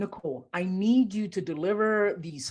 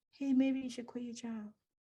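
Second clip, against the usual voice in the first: small, soft, high-pitched voice; 6 semitones higher, 8 dB quieter than usual. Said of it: "it's the little [name] voice".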